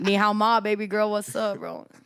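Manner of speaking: put-on flirty guy voice. Mocking the messages men who like her on Hinge send: imitating a flirty Hinge guy. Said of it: "Every guy that likes me on Hinge".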